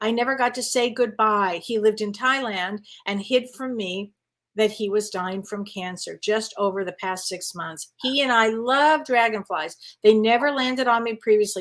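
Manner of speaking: normal talking voice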